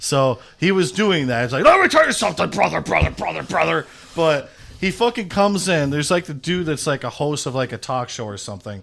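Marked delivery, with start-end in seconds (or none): 1.6-3.9 rough-edged, raspy, pitched-up wrestling promo delivery. Retelling a promo where someone acted like Hulk Hogan: Hulk Hogan voice. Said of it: "When Shawn Michaels was acting like Hulk Hogan".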